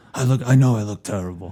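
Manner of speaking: low, weak, raspy voice. Practicing impressions, slipping into a Brando voice as Don Corleone. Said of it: "I'm back to Brando".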